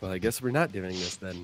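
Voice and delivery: quiet, low, fast muttering. Voicing a character in a role-play, muttering under his breath. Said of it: "Secretly muttering under his breath".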